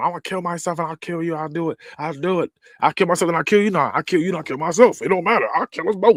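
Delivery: high mock woman's voice, menacing, repetitive and pressing. Retelling a story, quoting a woman during an argument: imitating a woman threatening. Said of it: "she's like threatening".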